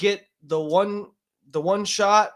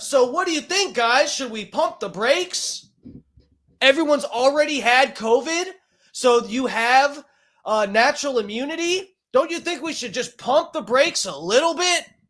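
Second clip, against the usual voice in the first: full-on, high, loud screaming rant; 8 semitones higher than usual. Addressing the guys listening and asking what they think, screaming. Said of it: "Sorry, I'm screaming already".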